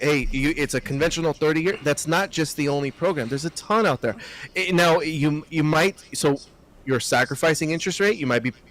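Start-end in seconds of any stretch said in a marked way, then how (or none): none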